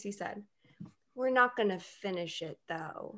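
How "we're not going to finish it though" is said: hesitant, unsure, tentative delivery. Retelling a shared ice cream moment, imitating boyfriend's exact tone. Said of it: "he did this exact tone of voice".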